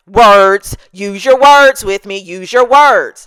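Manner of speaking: loud, condescending, talking-down voice. Retelling what a store worker snapped at the speaker: imitating a condescending cashier. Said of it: "the attitude and inflection that you're using is how she said it".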